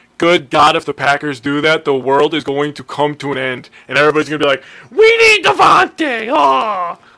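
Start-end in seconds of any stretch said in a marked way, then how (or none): 4.9-7.0 very high, loud, whiny voice. Imitating complaining fans: mocking whiny fan voice. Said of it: "I don't know if you guys enjoy that voice".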